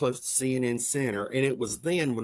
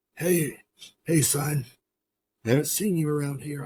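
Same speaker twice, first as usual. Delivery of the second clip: raspy, rasped-out voice; 2 semitones higher than usual. Retelling wrestling legend Terry Funk sitting down beside him, in a raspy Terry Funk voice. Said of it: "in that raspy voice".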